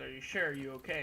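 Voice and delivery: ordinary talk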